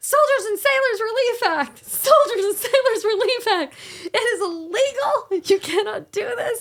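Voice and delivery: shrill, loud, very high-pitched scream. Retelling lying in the driveway screaming at a man, re-enacting the scream. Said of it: "And I'm screaming".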